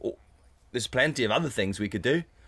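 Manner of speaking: ordinary talk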